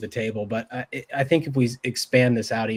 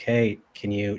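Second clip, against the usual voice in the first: mock flat, emotionless deadpan delivery; 2 semitones lower, 3 dB quieter than usual. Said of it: "flat affect, like, no emotion".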